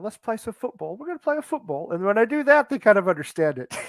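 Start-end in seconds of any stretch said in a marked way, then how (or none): 0.0-1.9 a little put-on, slight English accent. Explaining how they talk about football, the speaker puts on a slight english accent. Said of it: "I even put on a little English accent".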